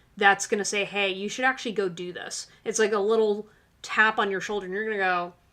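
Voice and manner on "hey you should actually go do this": normal talking voice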